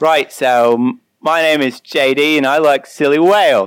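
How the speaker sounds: slow, drawn-out, put-on Australian accent. Asked for their best Australian accent, introducing themselves in an Australian accent. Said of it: "Australian accent. Here we go".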